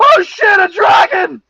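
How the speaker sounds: high, loud, panicked crying-out shout. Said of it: "a lot of people are like".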